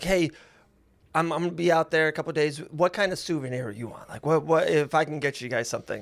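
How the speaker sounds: ordinary talk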